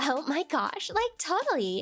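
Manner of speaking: put-on Valley girl accent. After warning listeners, the speaker reads text in a Valley girl accent. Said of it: "If you guys don't like Valago accent, um, close your ears now".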